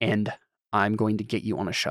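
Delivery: whispered speech. Voicing a character who urges Evelyn to pack and leave: whispering in character. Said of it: "whispering this to you".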